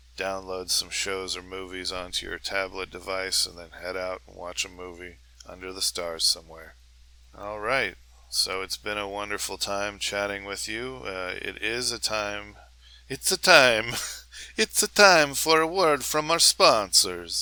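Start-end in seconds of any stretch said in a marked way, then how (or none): 13.1-17.5 really bad, loud, put-on Italian accent. Speaker wrapping up a chat before an ad break, in a really bad italian accent. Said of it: "really, really bad Italian accent".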